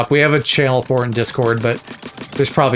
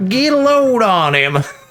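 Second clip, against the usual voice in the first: exaggerated Southern drawl, pitched very high; 9 semitones higher, 3 dB louder than usual. Recalling reading a line aloud a certain way: Larry the Cable Guy Southern drawl. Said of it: "like, Larry the Cable Guy, get her done kind of way".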